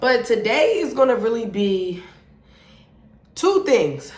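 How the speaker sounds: winded, catching breath between words. Just ran out to the car to film a video, out of breath. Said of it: "Let me catch my breath".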